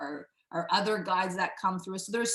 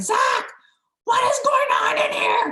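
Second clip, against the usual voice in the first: shrill, loud calling out at very high pitch; 10 dB louder than usual. Retelling what a client shouted from the bathroom: imitating someone yelling. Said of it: "and she's yelling".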